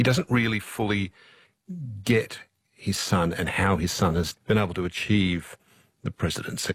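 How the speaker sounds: ordinary delivery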